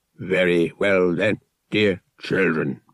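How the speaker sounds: deep, then squeaky droid voice. Narrator reading a droid addressing eight children, deep, then squeaky droid voice. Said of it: "the droid continued in its deep, then squeaky tones".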